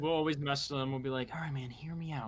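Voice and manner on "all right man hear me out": hushed, soft, confiding whisper. Showing how they mess with Sergeant Hill: imitating Sergeant Hill whispering. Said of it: "'cause he likes to whisper".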